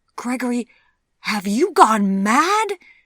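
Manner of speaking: high, choked, strangled outburst. Reading a shocked woman's reply to a man who wants her as his wife, strangled voice. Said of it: "she managed to get out in a strangled voice".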